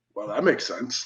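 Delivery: very low, soft, dad-style deep baritone. Retelling what the speaker's dad said, in his deep baritone voice. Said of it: "In his deep baritone voice".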